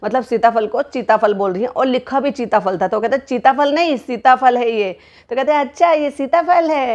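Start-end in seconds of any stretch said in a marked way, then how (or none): 5.3-7.0 put-on, high-pitched, babyish voice. Retelling what a woman said while showing a fruit: baby voice. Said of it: "ऐसे मतलब baby voice बनाकर कहती हैं".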